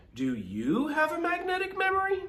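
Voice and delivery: very high, sing-song, curious wondering tone. Retelling how a female voice asked a question: imitating a curious voice. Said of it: "that's how she said it. Like curious".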